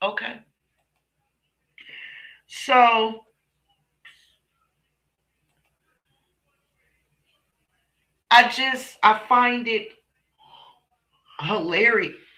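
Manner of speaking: hiccuping while speaking. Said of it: "I got the hiccups".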